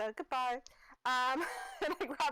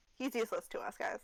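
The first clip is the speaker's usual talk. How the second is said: usual speaking voice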